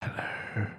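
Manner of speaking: strong, loud, pushed stage whisper, fully unvoiced. Testing whether the audio cuts out, a loud whisper on hello. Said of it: "That was a very loud whisper".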